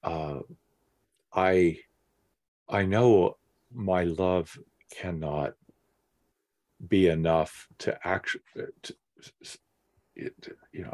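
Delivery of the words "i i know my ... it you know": halting, stumbling, faltering, stuttering speech. Speaking in a discussion after another speaker lets them go ahead, stuttering. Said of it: "I'm stuttering".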